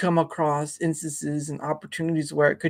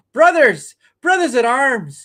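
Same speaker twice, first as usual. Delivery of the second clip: put-on loud, slow, booming, swooping Irish accent breaking through; 9 semitones higher, 9 dB louder than usual. Imitating an actor's line where his Irish comes out: Michael Fassbender's slipping Irish accent. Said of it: "You hear that Irish come out".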